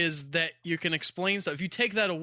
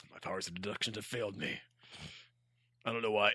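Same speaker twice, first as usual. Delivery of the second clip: very low, deep, hushed detective murmur; 10 semitones lower, 9 dB quieter than usual. Retelling a story, the speaker voices the detective in a deep Sherlock Holmes voice. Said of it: "doesn't have a deep voice like this".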